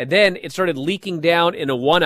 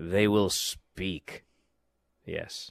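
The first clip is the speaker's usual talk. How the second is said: theatrical, hushed, very soft dramatic delivery; 8 semitones lower, 9 dB quieter than usual. Finishing a list of wrestling matches, said with a dramatic delivery. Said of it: "the way you said that was so dramatic".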